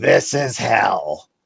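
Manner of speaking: rough, gravel-toned delivery with a gravelly rasp. Recall what a dear friend who wrote books always said, in a gravelly Sylvia Browne voice. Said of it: "in her wonderful gravelly voice".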